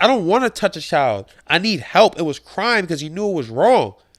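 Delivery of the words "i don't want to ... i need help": ordinary talk, nothing marked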